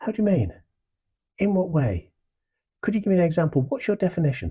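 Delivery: very high, curious, inquisitive, interested tone. Demonstrating a technique for answering someone, in an inquisitive, curious tone. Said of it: "I just become inquisitive, interested, curious".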